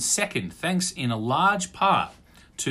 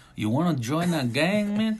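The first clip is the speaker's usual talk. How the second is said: put-on Mexican-type accent voice; 3 semitones higher than usual. Asked to do a Mexican-y type voice, speaking in a put-on Mexican accent. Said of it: "give me something in your Mexicano".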